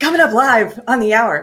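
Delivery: zany, wacky morning-zoo radio DJ voice. Doing the show intro like a morning radio host: Morning Zoo radio host style. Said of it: "in the style of one of those Morning Zoo radio channels".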